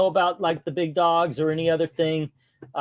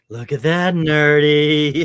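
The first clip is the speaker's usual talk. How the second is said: acted, loud, very slow, nerdy stretched creepy drawl; 7 dB louder than usual. Repeating another speaker's line the way they said it: imitating a creepy tone. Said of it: "the way you say it, it sounds creepy".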